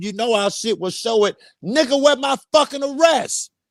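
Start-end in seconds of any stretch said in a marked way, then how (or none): 1.6-3.5 high, loud yelling. Retelling his own demand during an argument: imitating his own past yelling. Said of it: "I was yelling at you".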